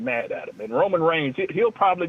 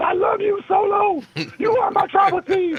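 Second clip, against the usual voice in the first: very high, loud, adoring yell. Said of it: "he looks at him and yells".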